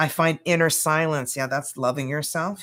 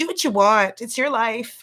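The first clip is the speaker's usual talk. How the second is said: motherly mom voice, pitched up; 7 semitones higher, 3 dB louder than usual. Talking to viewers, the speaker slips into imitating their mother's voice. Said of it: "I sound like my mother".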